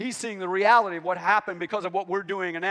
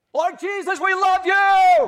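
loud crying out, higher pitch, slower pace; 12 semitones higher, 7 dB louder than usual. Showing listeners how people cried out their praise, crying out loudly. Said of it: "crying out with a loud voice".

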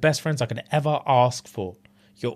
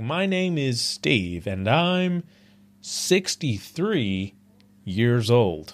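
put-on old-time announcer voice, pitched much lower; 2 semitones lower than usual. Describing a man who talks like a 60s TV host, imitating Steve. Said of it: "And he talks like that".

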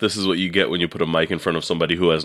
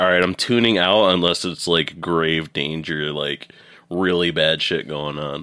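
plain

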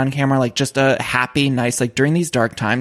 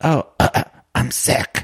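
slow, put-on sick voice. Retelling a call where she suddenly changed her voice: faking a sick voice. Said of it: "she all of a sudden like changed her voice".

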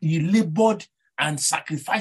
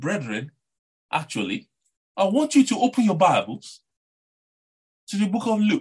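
fancy put-on posh accent, tongue-twisted; 3 semitones higher than usual. Imagining opening a sermon to millions of people, posh accent. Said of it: "I will use my posh accent".

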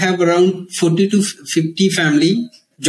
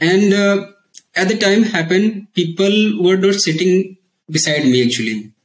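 ordinary delivery

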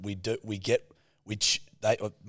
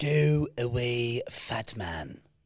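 put-on cartoon baby voice. Taking a turn at an impression after being asked: Stewie voice. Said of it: "Wrecked by Stewie".

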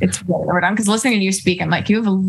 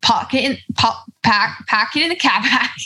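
put-on Boston accent; 5 semitones higher than usual. Asked for an accent example, warming up with phrases: put-on Boston accent. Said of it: "that was Boston".

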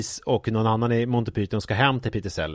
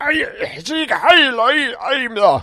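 stretched out, very high-pitched and loud; 14 semitones higher, 7 dB louder than usual. Retelling a talk-show entrance in Nazi costume: imitating Peter Sellers dressed as a Nazi. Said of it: "då är han utklädd som nazist och liksom kommer in och typ så här".

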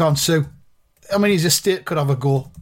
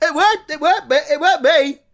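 goofy put-on voice, much higher and slower; 12 semitones higher, 4 dB louder than usual. Comedian denying being the murderer after voice experts are called in, in a silly voice. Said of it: "I was going around talking like this".

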